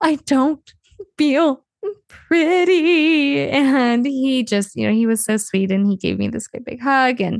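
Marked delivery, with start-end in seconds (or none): 0.0-3.5 very slow, high sobbing with catching breaths. Recounting walking out crying to her husband: retelling sobbing while talking. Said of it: "I'm just in between these sobs, I'm going".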